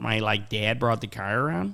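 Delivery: imitated, put-on Buffalo accent. Repeating the other speaker's example of the Buffalo accent: imitating a Buffalo accent. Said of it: "the Buffalo accent is so gross".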